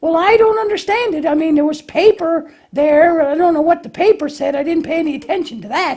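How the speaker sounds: high, squeaky, befuddled puppet lamb voice. Lambie tries putting something together without following directions, Lambie puppet voice. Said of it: "Lambie tries to put something together without following directions".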